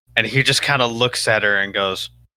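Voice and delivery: ordinary talk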